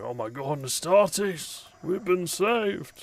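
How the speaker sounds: very high, relieved exclamation. Voicing soldiers who lower their rifles on seeing an Astartes: guardsmen relieved at rescue. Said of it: "they kind of slowly lower their rifles and like".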